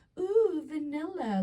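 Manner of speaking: mock very high, thrilled, excited squeal. Retelling finding perfume in a free box: retelling excited squeal. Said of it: "we're so excited".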